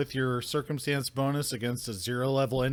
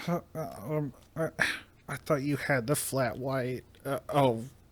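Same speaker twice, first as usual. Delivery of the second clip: put-on scared, young, timid voice with terrified stammer. Voicing a waiter who got the order wrong: timid, terrified young rat folk. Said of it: "a very timid young rat folk".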